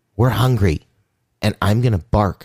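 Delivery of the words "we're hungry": mock screaming in a child's voice. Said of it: "start screaming".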